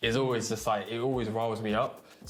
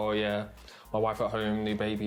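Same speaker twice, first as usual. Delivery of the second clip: plain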